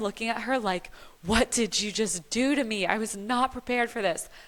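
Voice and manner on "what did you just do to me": mock-mad, acted angry disbelief. Recalling first seeing her newborn, she acts out her reaction: retelling angry disbelief. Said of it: "I am mad".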